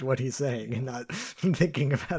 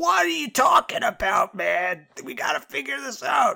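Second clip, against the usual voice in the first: very high-pitched, ragged, rough screaming; 12 semitones higher, 7 dB louder than usual. Retelling a movie scene, imitating Donnie screaming at someone. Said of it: "Donnie's just, like, screaming at him".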